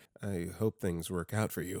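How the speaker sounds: very quiet. Reading a story where the speechless caller replies: very quiet. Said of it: "very quietly said".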